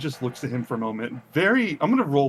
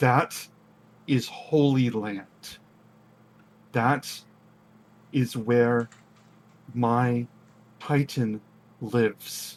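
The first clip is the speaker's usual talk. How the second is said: snarled voice. Voicing a character who snarls at another during a standoff: snarling. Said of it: "just snarls and says".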